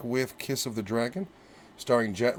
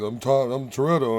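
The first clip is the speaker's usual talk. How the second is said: usual speaking voice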